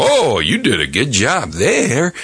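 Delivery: sing-song, stretched-out, drawn-out game announcer voice. Complaining about a video game's announcer: The Shoot announcer voice. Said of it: "the announcer voice that's going".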